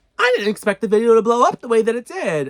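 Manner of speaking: shrill, very loud social-media creator voice. Mocking TikTokers who get a million views: imitating a TikToker. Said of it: "now I sound like one of those, like, TikTokers".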